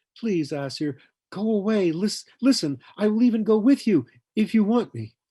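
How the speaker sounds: very high, loud, begging plea. Narrating a woman clinging to a man's arm, in a pleading voice. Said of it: "Her voice had lost its lilt of arrogance and became pleading".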